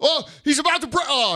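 overexcited announcer voice, high and swooping. Complaining about sportscasters, the speaker imitates a mock-overexcited sports announcer. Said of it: "trying to make it sound like he just won the Super Bowl".

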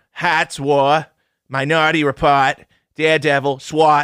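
playful, put-on Boston accent done for fun. Going through Colin Farrell's film credits for the others, put-on Boston accent. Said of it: "You doing that accent?".

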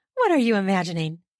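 said quickly. A narrator reads a woman's question to a man, asked quickly. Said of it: "She asked quickly".

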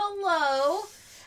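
shrill, very high, loud acted-out scream. Retelling a character's fit of punching walls: imitating a scream.

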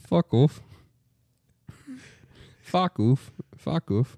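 high-pitched, sing-song British accent. Repeating a phrase backwards with friends, in a British accent. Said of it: "you sound British".

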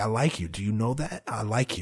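mock smug, slimy, oily tone. Imitating a contestant telling a woman he likes her: imitating a slimy suitor. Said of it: "it was just so slimy".

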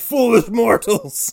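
very high-pitched, taunting gator monster villain voice. Joking about a giant gator face rising from the water: voicing the giant gator monster. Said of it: "And was like".

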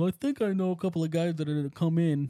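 goofy, dopey, dim-witted voice. Retelling what Ethan said about next season, in a doofus voice. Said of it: "I don't know why I gave him a doofus voice".

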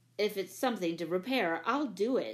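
ordinary delivery

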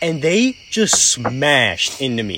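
plain

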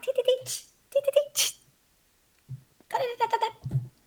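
silly, very high, chirpy tee-tee noises.

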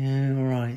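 gloomy, mopey, defeated tone. Retelling how a friend answered each morning, Eeyore-like voice. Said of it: "Sounded like Eeyore".

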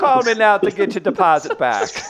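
very high, loud, belted Jamaican accent. Trading accent bits with co-hosts, deliver this in a Jamaican Mario voice. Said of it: "Jamaican Mario?".

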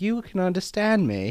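cheesy put-on British accent. Retelling the movie scene where he talks to a snake, as Harry in fake British accent. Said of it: "You're gonna do the fake British accent".

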